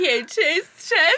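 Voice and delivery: put-on drunk voice. Retelling the other speaker's story post: imitating a drunk voice. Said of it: "She's so drunk right now".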